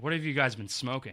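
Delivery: ordinary delivery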